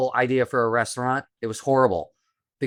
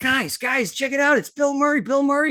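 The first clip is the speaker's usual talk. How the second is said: very high, thrilled, excited shouting; 13 semitones higher than usual. The speaker retells spotting a man outside the window and calling the guys, retelling own screaming. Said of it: "And I'm screaming".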